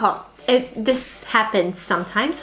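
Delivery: ordinary talk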